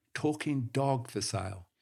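ordinary delivery

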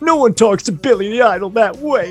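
put-on high-pitched whiny voice. Retelling what a scary-looking biker said: imitating a high-pitched whiny voice. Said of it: "really high-pitched, like, whiny kind of voice".

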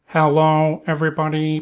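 mechanical, robotic voice. Predicting that in 100 years everyone will talk the same: robot voice. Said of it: "Everybody be like robots".

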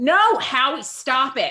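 mock upset, very slow, high, loud screaming. Remembering being twelve and watching a band member: imitating own past screaming.

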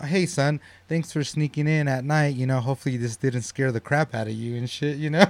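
home-assistant announcement voice. Retelling how a son got caught sneaking in, the speaker does the Alexa voice. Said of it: "it's just like the Alexa voice saying".

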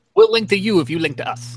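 bad Italian mobster impression. Offering to trade website links, the speaker tries an attempted italian mobster voice. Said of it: "that was supposed to be like a Italian mobster deal voice".

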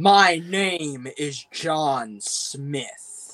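cartoon-style English dubbed-film voice. Mocking the English dub of The Raid 2, in a cartoonish English dub voice. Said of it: "it's so cartoonish".

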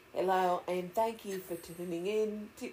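soft, put-on British accent that comes out strange. Opening the podcast and thanking listeners for tuning in, attempted British accent. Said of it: "I'm trying to do British".

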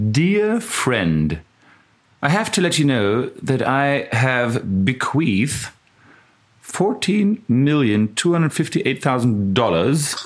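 put-on English accent. Reading aloud a letter written to the other speaker, in an English accent. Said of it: "Ich mache einen englischen Akzent".

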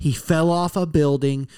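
ordinary talk

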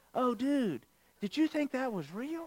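hushed high hipster voice. Retelling what a tour guide said about a gator: hipster voice. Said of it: "he says in his hipster voice".

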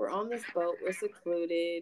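ordinary talk, nothing marked

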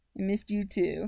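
ordinary delivery

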